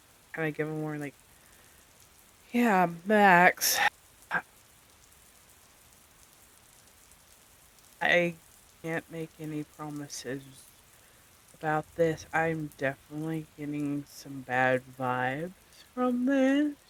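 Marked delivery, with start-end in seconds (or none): 3.1-16.7 slow, hushed voice. Playing a character in a game, speaking to max in a hushed voice. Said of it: "in a hushed voice".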